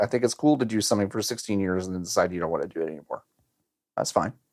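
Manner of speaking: low, quick bitter mutter. Talking with a co-host, the speaker comments in a bitter tone. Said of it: "you couldn't have sounded more bitter the way you said it".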